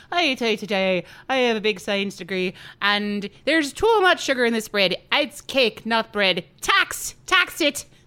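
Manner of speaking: loud, forceful put-on Irish accent. Acting out what the scientists said, doing an irish scientist impression. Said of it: "that's my Irish scientist impression".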